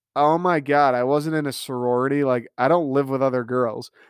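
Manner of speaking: usual speaking voice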